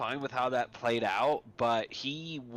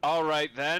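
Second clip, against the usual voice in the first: put-on authoritative, commanding voice; 4 semitones higher, 4 dB louder than usual. Facing a locked door and a refusal, the character steps up, authoritative voice. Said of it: "he puts on his authoritative voice".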